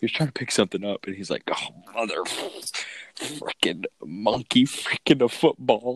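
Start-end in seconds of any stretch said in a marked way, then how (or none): 1.5-6.0 put-on exasperated outburst, pitched up and slow. Retelling a boss's outburst while picking something up: imitating a frustrated outburst. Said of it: "he was getting really frustrated with something".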